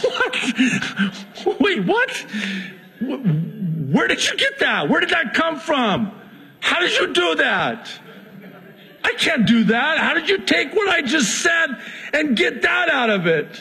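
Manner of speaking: mock disbelief, very high and bewildered. Retelling his own stunned reply to his wife: retelling his own baffled reply. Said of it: "now I'm the one giving her the look".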